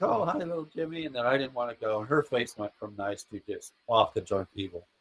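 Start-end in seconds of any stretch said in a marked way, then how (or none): 0.0-1.1 acted sweet, friendly, pitched-up voice. Retelling how a lady greeted him as a kid: imitating someone being nice. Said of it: "She started out nice".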